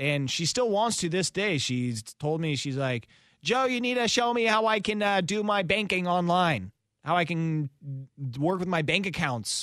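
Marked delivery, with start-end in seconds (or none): 3.4-9.6 high, put-on yelling, calling out. Guest acts out a woman calling to them across the room, imitating someone yelling. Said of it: "that's her yelling at me across the room".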